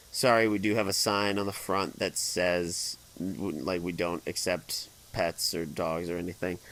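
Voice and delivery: ordinary talk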